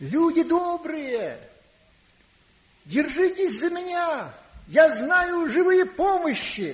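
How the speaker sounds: woman's voice calling out loudly, high and slow.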